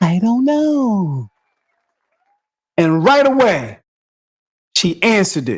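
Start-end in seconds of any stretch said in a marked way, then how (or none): 0.0-1.3 sweet, smooth angelic voice, drawn out. Repeating how she answered, in the angel-like voice. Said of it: "How she said it in the angel like voice".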